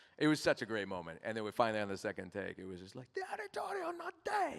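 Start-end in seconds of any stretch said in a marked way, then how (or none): 3.1-4.6 put-on dramatic, very high-pitched, shrill scream. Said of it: "but he's screaming it".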